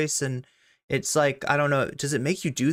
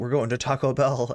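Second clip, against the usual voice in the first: put-on demon voice, much lower pitched; 3 semitones lower than usual. Retelling how she chimes in while the group picks a lunch spot, demon voice. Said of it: "she chimes in with the demon voice".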